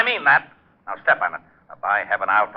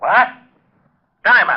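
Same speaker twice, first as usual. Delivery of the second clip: full-throated, high-pitched yell; 8 semitones higher, 4 dB louder than usual. Shouting at a caller on the phone in a radio drama scene: yelling. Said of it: "You better watch that yelling".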